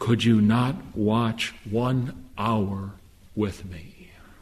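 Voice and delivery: mock-sorrowful, pleading, acted-out tone. A preacher retells the Savior waking the sleeping apostles, retelling a sorrowful plea. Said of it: "in the most sorrowful of voice, in the most pleading tone".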